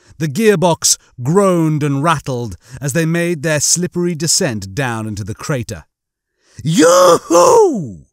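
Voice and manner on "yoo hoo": loud, very high squealing falsetto. Narrating a cat calling out from a window, squealing in falsetto. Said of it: "The cat squealed in falsetto".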